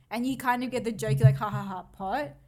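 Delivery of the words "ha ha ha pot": normal talking voice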